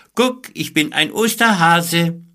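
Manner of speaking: very high, loud, mocking, jeering call. Hopping beside Sabine, Elias calls out to her, mocking call. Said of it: "Doch er spottete und hüpfte wie ein Hase neben ihr her und rief".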